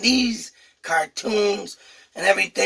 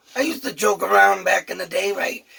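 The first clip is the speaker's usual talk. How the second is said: ordinary talk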